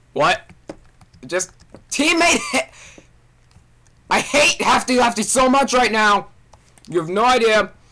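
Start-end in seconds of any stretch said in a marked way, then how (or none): 1.9-7.7 yelling loudly. Playing a game on stream, complaining about another player, yelling. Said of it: "I'm sorry for yelling".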